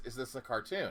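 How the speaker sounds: usual speaking voice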